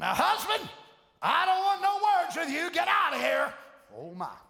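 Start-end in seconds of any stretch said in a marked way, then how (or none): 0.0-3.5 put-on angry woman, hot-tempered, flying off the handle. Acting out a tense wife ordering her husband out: imitating an angry wife. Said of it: "you wanna fly off temper".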